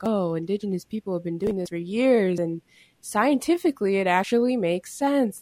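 heavily sarcastic know-it-all scientist voice, faux big revelation. Imitating scientists to make a point: sarcastic imitation of scientists. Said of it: "I'm being sarcastic".

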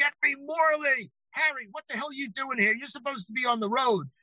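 high, hollered screaming like a carnival barker. Retell how Don called out from his busy office and greeted Harry, imitating him screaming. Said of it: "And he's screaming".

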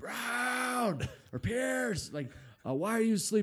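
shrill, very high-pitched screaming yell. Speaker retells the coach who woke them up yelling at them; retelling a coach screaming. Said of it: "he starts screaming at me".

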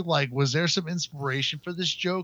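ordinary talk

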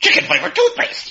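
silly, rough, creaky funny voice. Asked by the other speaker to imitate them, imitating the other speaker. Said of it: "So try to imitate me".

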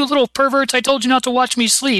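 high-pitched mock scolding voice. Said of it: "he's like".

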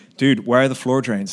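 loud put-on American dude accent. Retelling what a visiting contractor said on seeing the kitchen: imitating an American accent. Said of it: "I'm sorry to every American in the room, but I felt it needed accent".

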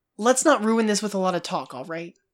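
usual speaking voice

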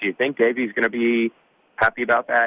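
sarcasm-laced, sarcastic delivery. Retelling what another man said, mock-sarcastic question.

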